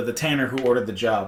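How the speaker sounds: ordinary talk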